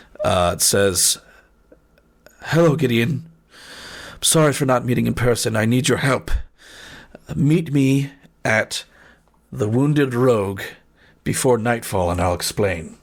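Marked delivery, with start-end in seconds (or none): 2.4-12.8 frightened, scared motherly voice. Voicing a sending spell message from the character's mother: scared mother's voice. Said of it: "it sounds like your mother, but she's scared".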